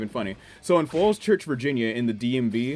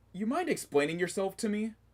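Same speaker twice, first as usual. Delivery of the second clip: firm, higher-pitched, pointed, confrontational tone; 8 semitones higher, 8 dB quieter than usual. Retelling how a news reporter confronted a man: imitating Chris Hansen. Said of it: "he walks in and he's like".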